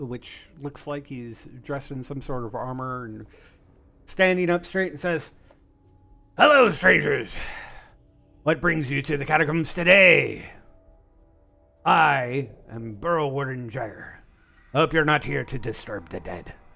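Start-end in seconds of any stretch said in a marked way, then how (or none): 6.4-16.5 very loud, bellowed swashbuckling pirate captain voice. The narrator voices a deep gnome greeting strangers in the catacombs, Burrow Warden Jagger's pirate voice. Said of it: "I don't know why he sounds like a pirate".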